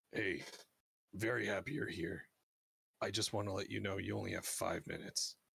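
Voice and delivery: hushed whisper, very close and soft. Describing a man kneeling to whisper a welcome in your ear; whispering. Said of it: "he whispers in your ear".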